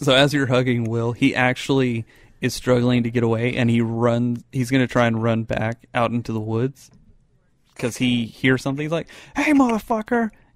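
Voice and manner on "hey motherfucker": very high-pitched, shrill yelling. Voicing a character running back into the woods after hearing something: yelling. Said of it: "who are you yelling at?".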